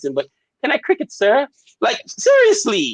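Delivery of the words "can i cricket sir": clumsy, high, bad English accent. Imagining the guy in the fourth window asking, in an attempted english accent. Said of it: "I can't do an English accent".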